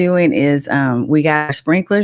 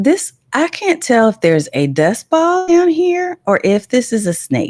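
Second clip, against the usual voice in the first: calm, matter-of-fact tone, higher pitch; 7 semitones higher than usual. Parent retelling how the daughter spotted a possible snake, imitating a calm, barely audible voice. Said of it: "she said it really calm, like I could barely hear her say it".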